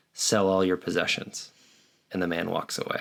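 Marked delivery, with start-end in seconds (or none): none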